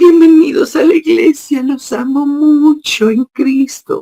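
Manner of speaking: very high, affected, mannered little voice. Mocking how a pastor greets the church: imitating an affected, mannered little voice. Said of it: "una vocecita bien amanerada".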